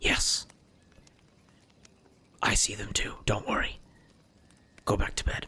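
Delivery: barely-voiced, very hushed whisper. Answering a whispered question through a sending stone, very hushed. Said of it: "Very hushed tone".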